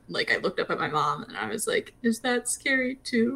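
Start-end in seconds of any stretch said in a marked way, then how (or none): 2.0-3.3 tiny, pitiful little voice, high and slow. Recalling looking up at their mom to ask her, in a pitiful little voice. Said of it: "the most pitiful little voice".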